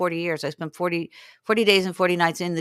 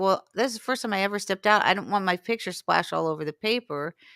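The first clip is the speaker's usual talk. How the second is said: ordinary talk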